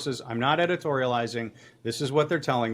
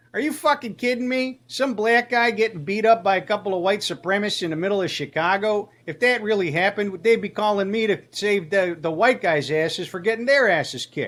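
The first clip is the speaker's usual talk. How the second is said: put-on Chicago accent, higher pitch; 6 semitones higher than usual. Retelling a phone call with a police source: imitating Rocco. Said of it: "that was a really good voice that you did".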